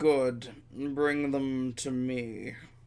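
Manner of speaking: saucy villain voice. Voicing a lord inside who orders the visitors brought: saucy villain voice. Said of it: "sounds saucy".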